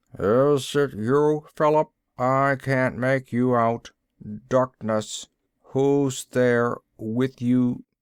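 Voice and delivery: slow, flat, lifeless, toneless mechanical machine voice. Reading a story aloud, voicing a voice from a wall speaker: toneless, mechanical voice. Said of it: "a mechanical, lifeless voice".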